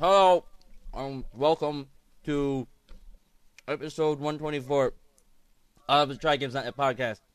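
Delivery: speaking with mouth full. A podcast host opening the episode while eating falafel, talking with mouth full. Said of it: "I sound like that because I'm eating falafel".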